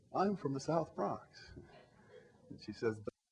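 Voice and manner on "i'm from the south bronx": lilting, sing-song voice. Retelling how they told someone their neighborhood, saying it with a lilt. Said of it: "I try to say it with a lilt in my voice".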